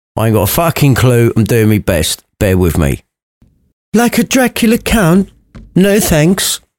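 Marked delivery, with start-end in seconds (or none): 4.0-6.6 posh voice, pitched somewhat higher. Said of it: "the daughter's so posh".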